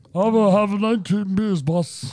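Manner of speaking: put-on giant wrestler voice. Joking with friends, telling someone to drink more: Andre the Giant voice. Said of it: "The Andre the Giant?".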